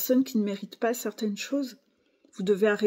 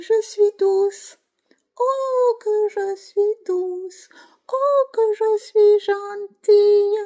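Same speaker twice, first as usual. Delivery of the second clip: fake-sweet tiny voice, very high, slow, drawn out; 12 semitones higher, 7 dB louder than usual. Imitating a fake-nice manipulator: imitating a fake-nice tiny voice. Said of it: "Je prends ma petite voix pour te parler".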